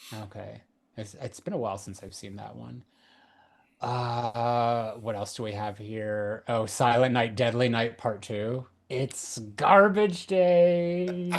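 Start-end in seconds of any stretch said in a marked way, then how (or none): 8.9-11.3 put-on creepy doll voice, higher and louder. Quoting a movie line about garbage day in a Chucky voice. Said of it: "I was doing, like, a Chucky".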